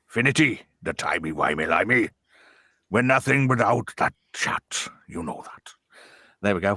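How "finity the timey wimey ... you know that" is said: lower, put-on Welsh sergeant-major voice. Reading out a chat comment in a Windsor Davies voice. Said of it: "my best Windsor Davis voice".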